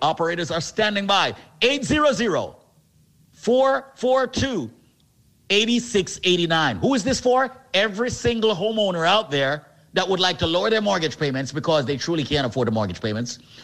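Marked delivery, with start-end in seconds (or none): 1.6-6.8 slow, deliberate, each item spaced and spelled out. Repeating the phone number to call a second time, saying it slowly. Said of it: "Let me say the number slowly".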